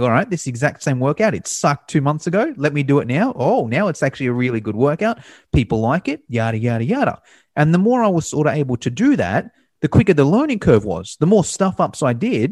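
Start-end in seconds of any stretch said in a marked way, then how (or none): none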